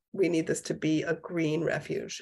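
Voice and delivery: ordinary talk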